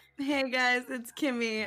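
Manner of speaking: high voice, hysterical cackle held in. Co-host introduces herself at the start of a podcast, holding back a laugh. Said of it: "I'm holding in a hysterical cackle right now".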